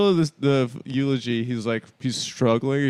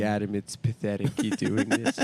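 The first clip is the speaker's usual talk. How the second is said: put-on lower, quieter old woman voice; 5 semitones lower, 6 dB quieter than usual.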